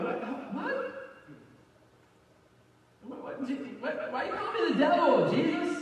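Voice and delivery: slow, baffled, halting, bewildered stammering. Retelling Peter's reaction to being called Satan: imitating Peter, bewildered. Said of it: "Can you imagine how weird that sounded to Peter? Peter's like".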